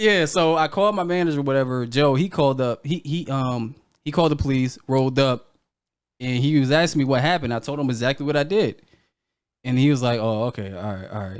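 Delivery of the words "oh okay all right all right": put-on very low, dead-level, flat monotone drone. Retelling how a man reacted after hearing what happened, imitating a flat monotone. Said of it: "Like he's mad monotone".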